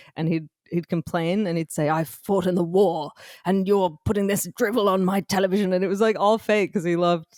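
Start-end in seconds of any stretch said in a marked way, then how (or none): 1.8-5.7 super British radio announcer delivery. Retelling a man's prank complaint calls to the BBC, British radio presenter voice. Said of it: "he had like a British like radio presenter voice".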